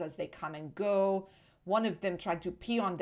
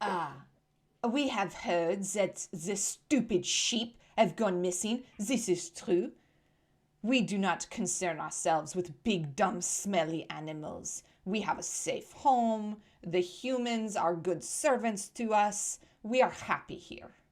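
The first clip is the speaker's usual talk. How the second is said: gossipy hen voice with put-on French accent. Voicing a gossipy chicken answering a player: French-accented gossipy chicken voice. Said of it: "they're French for sure".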